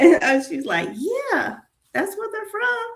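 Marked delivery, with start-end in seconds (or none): 0.9-2.8 imitated Southern accent, put on. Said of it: "she is so Southern".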